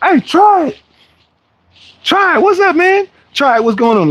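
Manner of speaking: mock very high, shrill yelled-out hello. Retelling how somebody at South Beach yelled out: imitating someone yelling out. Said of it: "I hear somebody yell out".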